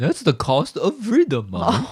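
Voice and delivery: high, swooping goofy dog voice with cracks. Speaker shows how they voice their dog in pretend conversations: voicing the family dog. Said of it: "That's our dog's voice".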